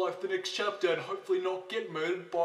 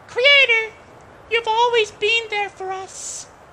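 shrill, booming character voice, very high and loud; 14 dB louder than usual. Reading a game's dialogue aloud in Mari's voice. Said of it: "Let's do Mari's voice".

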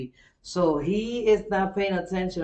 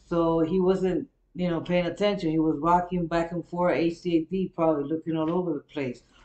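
ordinary talk

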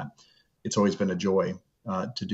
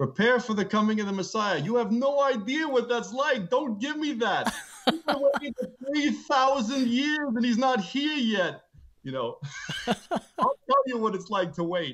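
put-on New York accent, pitched way up.

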